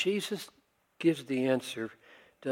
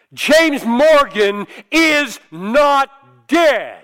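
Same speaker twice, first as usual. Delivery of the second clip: very loud, high-pitched, booming, thundering voice; 12 semitones higher, 17 dB louder than usual. Retell how your ethics teacher stood up and spoke at a funeral, in Lewis Smedes's booming voice. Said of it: "in his booming voice said".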